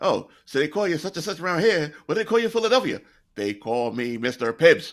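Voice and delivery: put-on old-movie gangster voice. Mocking old movie acting where everybody talked: imitating thirties gangster talk. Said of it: "like a thirties gangster".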